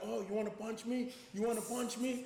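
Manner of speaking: play-acted loud, high shout. Retelling a lady's accusation in a confrontation: imitating a loud voice. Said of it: "with the loud voice".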